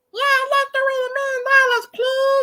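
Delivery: disguised, altered voice, very high-pitched. Retelling prank calls to radio stations: imitating own dropped-down voice. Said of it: "Drop my voice down".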